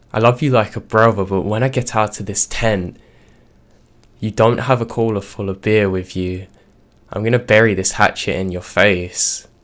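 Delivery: as menacing and threatening as it can get. Retelling a threat shouted from a tent at a visitor: imitating a threatening voice. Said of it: "in the most threatening voice I could muster".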